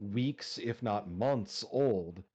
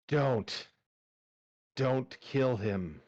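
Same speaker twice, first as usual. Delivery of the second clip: put-on hoarse, raspy, rasping elderly man voice; 2 semitones higher than usual. Voicing a scarred woman pleading for his life: rasping old man's voice. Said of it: "she rasps out in an old man's voice".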